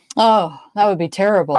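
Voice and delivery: ordinary talk, nothing marked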